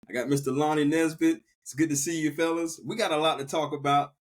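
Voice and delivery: ordinary talk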